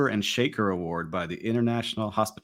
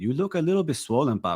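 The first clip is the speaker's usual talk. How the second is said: put-on accent from Venezuela; 6 semitones higher than usual. Retelling what mom said about looking swollen: imitating mom's Venezuelan Spanish accent. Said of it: "Can you just do the entire show in that accent?".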